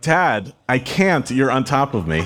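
half-yelled, drawn-out mild yell. Retelling a street fight where the father yells from underneath: imitating someone yelling. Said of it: "my dad is yelling".

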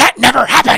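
angry, high, loud screaming. Retelling how someone in the kitchen screamed at the speaker: imitating someone screaming. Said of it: "and she screams".

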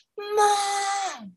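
blood-curdling, very high, drawn-out shriek. Retelling a friend screaming for her mother from upstairs: imitating a scream for mom. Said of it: "she screamed for her mother".

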